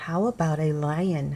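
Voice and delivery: ordinary talk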